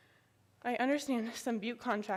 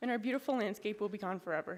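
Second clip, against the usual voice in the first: normal talking voice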